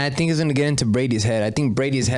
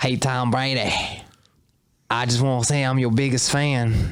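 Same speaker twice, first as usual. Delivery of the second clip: poor, weak put-on Boston accent. Doing a bit as a fan greeting his idol, in a bad Boston accent. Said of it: "That's not a good Boston accent".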